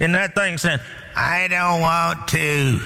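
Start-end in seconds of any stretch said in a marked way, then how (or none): 1.1-2.8 odd, funny put-on voice, very slow and drawn out. Speaker retells what the thing in the woman answered, funny voice. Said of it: "In a funny voice".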